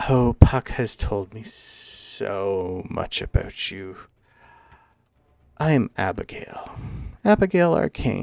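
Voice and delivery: put-on little, stooped, hunched old lady voice. Game master voicing a hunched old lady who looks at everybody; Abigail Arcane voice. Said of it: "just looks at everybody and goes".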